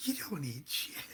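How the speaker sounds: quiet whispered voice. Retelling a whispered reply before mass: imitating own whisper. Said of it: "and I whisper back".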